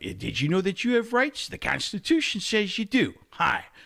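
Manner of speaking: high character voice with sing-song, swinging pitch. Doing a character from Better Call Saul: Saul Goodman impression. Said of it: "So the Saul Goodman character".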